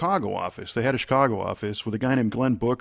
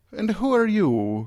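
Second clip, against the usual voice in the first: put-on very high, slow, drawn-out Irish accent; 10 semitones higher than usual. Retelling a phone call to an assistant: imitating Peggy Medina's Irish accent. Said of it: "has a, an Irish accent".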